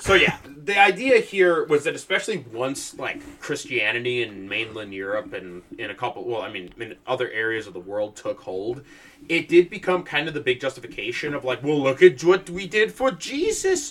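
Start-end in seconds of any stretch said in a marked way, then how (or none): 11.6-13.9 put-on New York, Manhattan accent. Acting out medieval Christians justifying conquest: put-on Manhattan accent. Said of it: "I don't know why that was a Manhattan accent".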